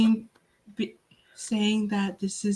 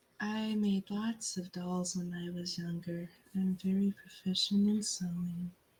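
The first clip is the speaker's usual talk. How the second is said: unsettling, spooky, creepy and eerie delivery; 11 dB quieter than usual. Offering in character to sew an arm back on: creepy delivery. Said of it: "You said that in a creepy way".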